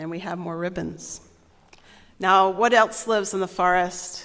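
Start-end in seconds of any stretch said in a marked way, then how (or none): none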